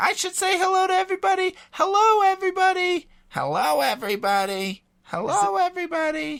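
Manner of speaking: very high voice. Quoting a movie scene after hearing hello everybody: Aunt Bethany voice. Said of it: "I'm just quoting Christmas Vacation".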